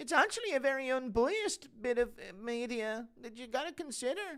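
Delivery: very high, eager, earnest voice. Urged to speed up, speaker launches into an announced impression: soy Gary impression. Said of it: "An impression of a soy Gary sticking up for the B B C".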